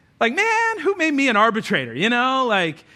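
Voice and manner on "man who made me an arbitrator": put-on sass, a little fed up. Reading Jesus's line as he may have said it, mock-sassy, exasperated. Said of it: "maybe Jesus said this with a little sass".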